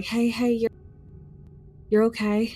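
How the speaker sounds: gentle, calming, reassuring, soothing voice. Acting out gently calming a rescued man: gentle soothing voice. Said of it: "gently talk to him".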